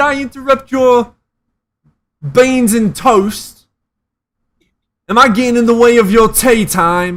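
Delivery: clumsy put-on British accent. Mocking the other speaker, in a bad British accent. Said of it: "I can't do a British accent".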